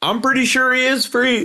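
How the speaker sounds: play-acted, very high-pitched shout. Imagining answering a shooting star that speaks to him: pretend shouting. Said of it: "and I'm shouting back".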